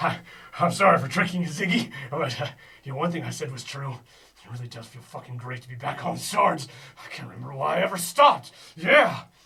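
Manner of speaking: crazed, manic, maniacal, unhinged delivery. Voicing a character who reveals he tricked ziggy: maniacal voice. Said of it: "he says with his maniacal voice".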